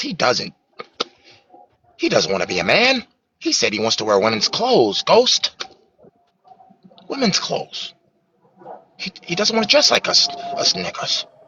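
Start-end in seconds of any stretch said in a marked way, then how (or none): 2.0-11.2 high-pitched, comic-book clown villain voice. Performing a bit to someone called Ghost, in a Joker voice. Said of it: "you sound just like the Joker".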